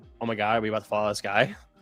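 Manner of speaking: scared frightened voice. Retelling a past thought while nervous on a plane: imitating own scared self. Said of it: "That would always scare me".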